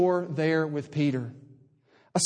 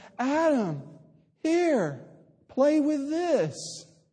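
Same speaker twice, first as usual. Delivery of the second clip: put-on sugary, coaxing sweetness, slow, higher pitch; 9 semitones higher than usual. Telling how an older sister handed her little brother an old gift, retelling a sweet offer. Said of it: "And so sweetly said".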